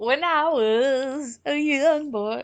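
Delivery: bad put-on Southern drawl. Joking about growing up in texas: bad southern accent. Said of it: "I have a bad Southern accent".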